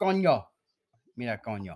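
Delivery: imitated Puerto Rican accent. Retelling what a woman said, in a put-on Puerto Rican accent. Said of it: "She's straight porter".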